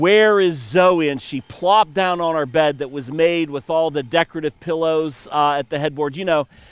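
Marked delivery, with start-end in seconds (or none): 0.0-1.1 loud, fed-up, exasperated yell at wits' end. Retelling what Leslie yelled in the bedroom, retelling an exasperated yell. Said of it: "she just yelled".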